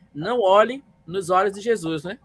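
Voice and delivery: ordinary talk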